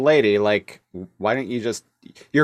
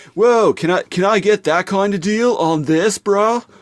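put-on surfer-dude voice, much higher pitch; 9 semitones higher, 4 dB louder than usual. Retelling a scene where Michelangelo talks to a shopkeeper, in Michelangelo surfer-dude voice. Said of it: "he speaks in that like surfer dude kind of way".

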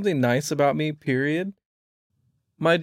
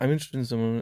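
ordinary talk

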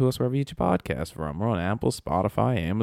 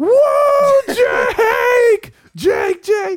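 put-on excited voice, much higher, louder; 10 dB louder than usual. Retelling a TV show scene where Charles greets Jake, imitating Charles all excited. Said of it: "And he's all excited and shit".

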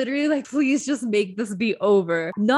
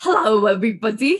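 put-on British accent, louder; 5 dB louder than usual. Greeting everybody while trying out a British accent, which a listener asks about. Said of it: "Is that your British accent".

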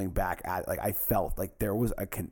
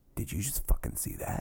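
hushed, whispered aside under the breath. Retelling what the condo owner said to his friend: imitating someone whispering. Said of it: "the owner of the condo whispering".

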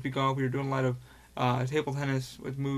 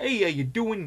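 put-on Boston accent, much higher and louder; 7 semitones higher, 5 dB louder than usual. Describing a VR video maker, imitating how he talks in a Boston accent. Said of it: "talks with a Bostonian accent".

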